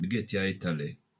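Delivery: Jamaican English accent. Comparing one phrase across English accents, now in a Jamaican accent. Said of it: "And in Jamaican".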